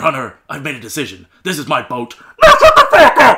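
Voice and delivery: loud, brassy shout like a trumpet. Showing one of his weird, obscure impressions: Gene Hackman trumpet shout. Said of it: "Gene Hackman when he shouts and sounds like a trumpet".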